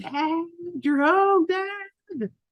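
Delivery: put-on raving, very high, stretched-out excited child voice. Retelling coming home to an excited child: imitating Ollie raving excitedly. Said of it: "Ollie was raving".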